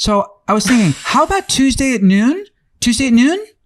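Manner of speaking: rising, questioning voice. Retelling how voicemail callers pose a question: imitating a caller posing a question. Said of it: "what they'll do is go".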